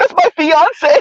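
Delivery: put-on crying Valley Girl voice. Retelling a clip of an arrested woman crying: imitating crying woman in Valley Girl voice. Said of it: "Valley Girl voice and everything".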